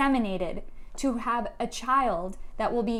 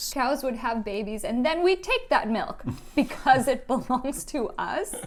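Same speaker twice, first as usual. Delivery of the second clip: usual speaking voice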